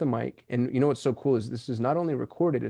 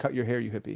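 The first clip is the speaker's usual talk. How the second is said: put-on flat, humorless, dead-serious deadpan delivery; 4 dB quieter than usual. Retelling what they say to strangers with long hair: retelling a deadpan remark. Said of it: "no sarcasm or humor in my voice".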